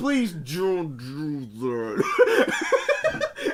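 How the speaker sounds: very slow, pleading voice, laughing, grinning.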